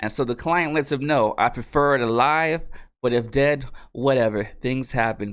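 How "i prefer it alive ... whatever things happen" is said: ordinary talk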